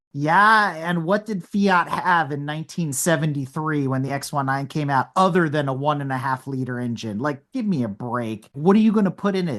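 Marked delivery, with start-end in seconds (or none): none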